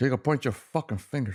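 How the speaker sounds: put-on Cuban accent, chopped-up and staccato. Speakers trade favorite quotes from a movie; choppy cuban accent. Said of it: "that Cuban choppy accent".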